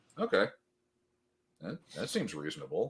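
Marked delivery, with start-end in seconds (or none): 1.6-2.9 heavy, sarcastic, faux-sincere delivery. Reacting to hearing about a demand to pay money: sarcastic. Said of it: "I'm being sarcastic".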